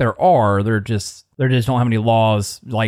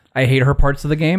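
ordinary talk, nothing marked

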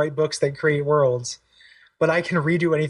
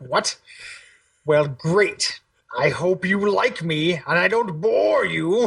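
put-on very slow, drawn-out, cranky old voice, angry and condescending. Imitating the game character Atreus when you are trapped: angry old fuddy. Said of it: "he's just this, like, angry old fuddy".

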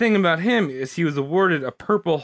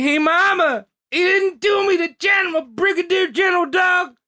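put-on high whining voice in a Southern accent; 13 semitones higher than usual. Retelling a letter home to his mother, imitating MacArthur whining in Southern accent. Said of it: "that was him whining".

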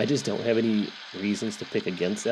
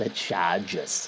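bad, terrible, fake put-on Boston accent; 3 semitones lower than usual. Previewing the day's games, repeating a team name in a terrible Boston accent. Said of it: "said it like with a terrible Boston accent".

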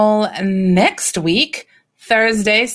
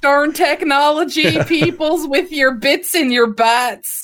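higher voice, plainly Southern accent; 5 semitones higher than usual. On a podcast, joking with a co-host about being older, in a Southern accent. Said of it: "I sounded so Southern there".

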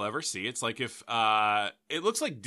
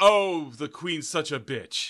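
put-on snooty young American child voice; 2 semitones higher, 4 dB louder than usual. Retelling a comedian's bit about Prince George: snobby Prince George voice. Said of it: "an American kinda snobby kid".

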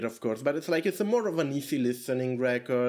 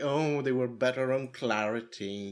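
put-on, deliberately contrary tone in a slow drawl. Acting out being the contrarian about the record: mock contrarian voice. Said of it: "That's my voice when I say this".

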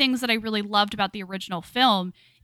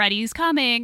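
usual speaking voice

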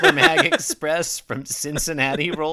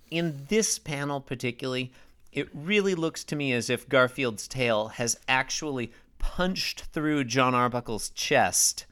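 ordinary delivery

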